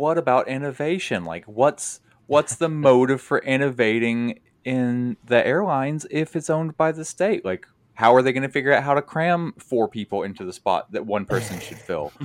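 sarcastic delivery. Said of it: "sarcastically state".

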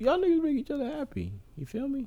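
very high, soft voice on the verge of tears. Asked why they said it like that, speaker explains their feelings, about to cry. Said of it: "Because I want to cry a little bit".

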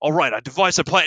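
put-on strong full Australian accent. Retelling a ninja's line from a video: full Australian accent. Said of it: "a full Australian accent".

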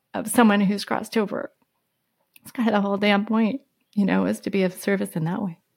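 emotional, choking up, voice catching. Speaking about the nephew who brought them online, getting emotional. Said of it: "I'm going to get emotional".

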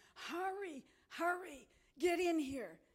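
high-pitched, urgent yell. Recounting a dream, the speaker re-enacts yelling from a doorway, retelling a yell. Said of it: "I'm yelling".

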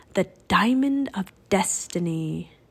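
ordinary delivery

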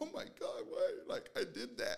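sobbing, tearful, crying voice. Retelling reacting to something heard while driving the highway, imitating own crying. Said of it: "and I'm crying".

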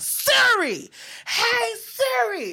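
very high, hollered call. Retelling calling out to Siri in the shower: imitating own hollering. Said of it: "I be hollering at fucking Siri".

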